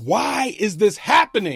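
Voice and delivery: imitated, put-on loud yelling. Retelling yelling at God after a crash: retelling a yell. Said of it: "simultaneously yelling at God".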